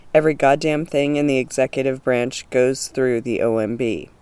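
normal talking voice

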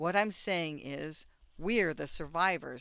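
ordinary delivery

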